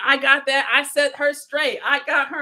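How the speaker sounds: ordinary talk, nothing marked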